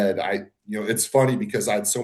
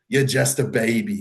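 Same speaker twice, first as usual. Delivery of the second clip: put-on New York accent. Recounting a judge's feedback on his entry: Steve Weinberger New York accent. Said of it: "his New York accent".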